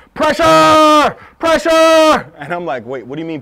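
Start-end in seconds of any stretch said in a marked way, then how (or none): 0.2-2.3 full shrill shout, very loud and high. Showing how loudly someone yelled outside, yelling pressure, pressure. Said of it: "it was like this".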